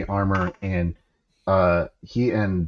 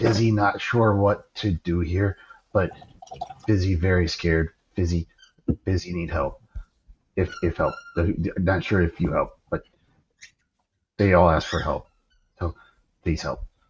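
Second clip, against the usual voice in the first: hushed, quiet whisper. Voicing a scared character praying secretly at a shrine: hiding a whisper. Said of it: "hiding a whisper".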